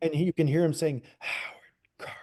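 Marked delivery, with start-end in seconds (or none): 1.2-2.1 put-on breathy voice, quieter. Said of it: "like that".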